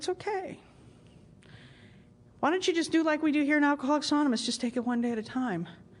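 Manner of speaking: hushed, low-key, quiet, soft-spoken voice. Recounting a moment of doubt, retelling a quiet voice heard speaking. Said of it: "I heard just this quiet voice say".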